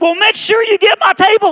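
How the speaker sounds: piercing, shrill, high shriek at full blast. Retelling a woman's reply to a man's goodbye, retelling a scream. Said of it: "she just screamed".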